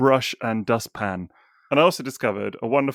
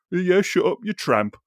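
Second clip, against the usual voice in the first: put-on Brummy Birmingham accent, pitched up; 7 semitones higher than usual. Recalling cousins insulting each other, the speaker does a Brummy accent. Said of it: "in that sort of Brummy Brummy accent".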